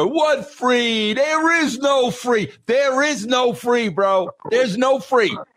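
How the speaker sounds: put-on high-pitched Italian-American accent. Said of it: "Danny Aiello in that Italian".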